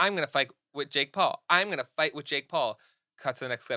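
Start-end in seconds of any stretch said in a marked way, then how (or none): none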